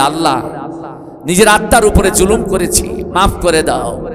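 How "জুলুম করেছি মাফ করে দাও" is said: normal talking voice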